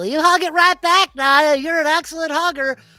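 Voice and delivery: shrill, booming, very loud, high-pitched yell. During a game, a character uses his bonus action and yells. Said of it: "as he yells".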